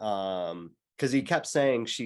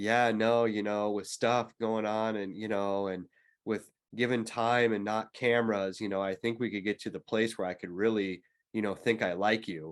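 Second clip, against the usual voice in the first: mock expressionless, flat deadpan monotone. Retelling what a man on a dating show said at dinner: imitating a deadpan reply.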